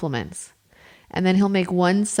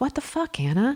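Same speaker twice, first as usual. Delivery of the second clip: mock muttering under breath, much higher pitch; 6 semitones higher, 4 dB quieter than usual. Quoting the husband on seeing the paper towels, imitating muttering under breath. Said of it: "I heard him say under his breath".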